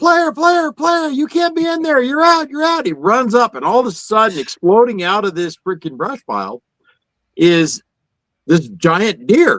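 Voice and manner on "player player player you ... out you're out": screaming, very high. Telling how James ran at a brush pile, the speaker is imitating James screaming. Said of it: "And he's screaming".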